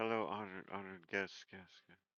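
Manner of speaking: announcer voice with words repeating like echoes. Voicing the official's greeting to the tournament with an echo effect: echoing announcer voice. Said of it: "I kinda make it sound like there's an echo".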